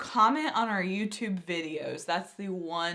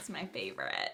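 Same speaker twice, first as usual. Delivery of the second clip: very low, hushed vocal fry on "favorite"; 10 semitones lower, 10 dB quieter than usual. A host plugging their social media accounts finishes off: vocal fry at the end. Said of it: "I did the vocal fry at the end".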